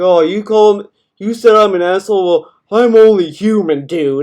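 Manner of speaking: put-upon, annoyed, passive-aggressive tone. Mocking the other speaker's response to viewers: imitating passive-aggressive annoyance. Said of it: "passive-aggressively annoyed".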